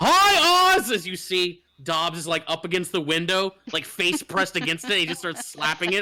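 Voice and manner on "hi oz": very high, booming holler with "hi" drawn out. Shouting to someone inside over the roar of the street outside, booming yell. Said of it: "sort of booming over the roar".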